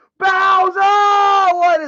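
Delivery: loud shouting. Calling out a name, then apologizing for it: yelling. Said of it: "I didn't mean to be yelling".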